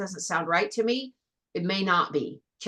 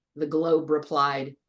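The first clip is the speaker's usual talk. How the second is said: ordinary delivery, nothing marked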